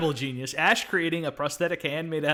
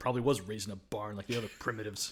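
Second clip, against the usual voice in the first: put-on mutter under breath, much lower, quieter; 7 semitones lower, 10 dB quieter than usual. Retelling what a man muttered after the door was left open, retelling a mutter under breath. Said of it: "he just mutters under his breath".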